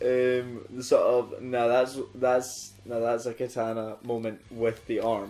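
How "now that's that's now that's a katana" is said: plain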